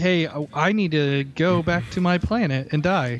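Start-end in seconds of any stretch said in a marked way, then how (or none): none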